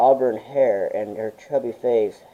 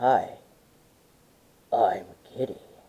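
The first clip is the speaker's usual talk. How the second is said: rough, gravelly, breathy, soft half-whispered creature voice; 5 dB quieter than usual. The gray creature raises an arm and greets the little girl in Kitty's gravelly voice. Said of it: "spoke in a gravely voice".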